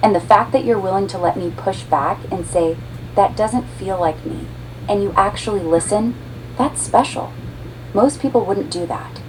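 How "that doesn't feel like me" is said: ordinary delivery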